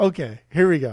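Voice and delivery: put-on condescending delivery. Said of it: "he'll start it so condescending".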